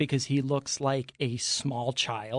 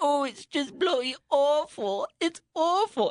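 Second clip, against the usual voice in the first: very high, slow, drawn-out whiny moan; 12 semitones higher than usual. Mocking a baking-show contestant who complains about his bakes: whiny imitation of Raul. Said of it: "he was so whiny".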